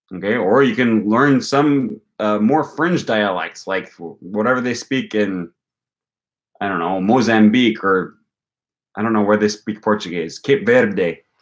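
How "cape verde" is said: Spanish accent and pronunciation. Naming places where Portuguese is spoken: Spanish accent. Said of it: "I just said Cape Verde with a Spanish accent".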